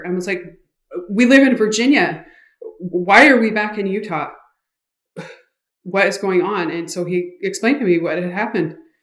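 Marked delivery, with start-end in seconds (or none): 1.1-6.7 frantic, panicked, confused and bewildered voice. Retelling waking up confused during a panic attack: retelling own panicked words. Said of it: "having a panic attack".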